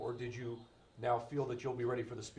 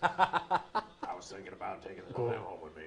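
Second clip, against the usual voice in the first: low, very slow, swooping, dragged-out drawl; 4 semitones lower, 4 dB louder than usual. Doing a movie character impression during a football watch: Carl from Sling Blade voice. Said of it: "he does sound exactly like Carl from Sling Blade".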